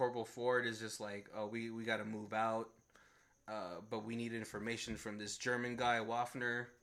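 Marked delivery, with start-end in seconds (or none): none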